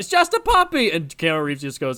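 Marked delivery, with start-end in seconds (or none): 0.0-0.9 put-on very high, panicked, shrieked screaming cry. Recounting a film scene where a character screams out, retelling a scream. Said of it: "Stewart screams out".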